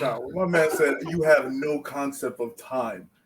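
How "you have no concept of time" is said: slow, totally straight-faced deadpan. Quoting a line the villain said: imitating Kang's deadpan line. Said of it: "he said it with a straight face".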